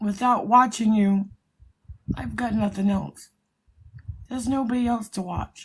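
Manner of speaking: tearful voice, close to crying, holding back tears. Telling someone watching them is all they have: tearful, holding back tears. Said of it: "Tears are coming".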